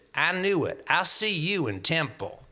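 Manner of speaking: put-on broad Southern American accent, laid on thick. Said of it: "who had a very heavy Southern accent".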